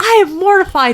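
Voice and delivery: put-on high, loud, sulking mortified whine like a preteen girl.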